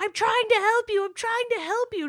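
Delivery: very high-pitched, unhinged, frantic shouting. Retelling how a film character keeps yelling: imitating someone yelling. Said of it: "he just keeps yelling".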